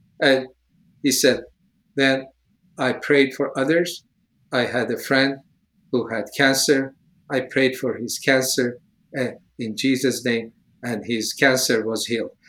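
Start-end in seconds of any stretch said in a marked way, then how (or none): 2.0-12.3 put-on emotionless, level, flat, soft monotone. Retelling how someone reported the healing, imitating a flat, emotionless telling. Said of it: "no emotions on that side".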